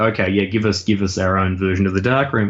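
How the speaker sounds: ordinary delivery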